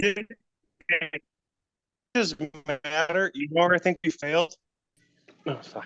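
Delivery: mouth-full talking, like something stuck in mouth, slightly high. Talking to another speaker about struggling for downloads, talking with mouth full. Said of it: "it sounded like you had something in your mouth".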